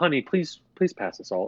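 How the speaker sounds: calm, collected, polite, sweet voice. Retelling a comedy sketch's dinner scene: imitating Will Ferrell as a calm polite father. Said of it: "totally calm, collected father figure".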